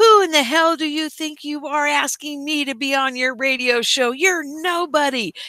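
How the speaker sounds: put-on yelling. Retelling how a man turned on a young fan: imitating someone yelling. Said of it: "He's now yelling at this kid".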